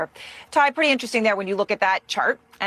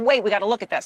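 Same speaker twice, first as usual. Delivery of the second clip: ordinary delivery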